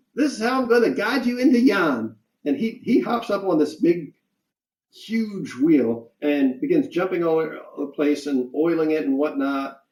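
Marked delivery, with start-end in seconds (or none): 0.2-2.2 squeaky voice, very high-pitched, way up high. Narrator voicing Squirt, an oil can bounding up behind the players: squeaky Squirt voice. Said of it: "you hear a squeaky voice from behind you say".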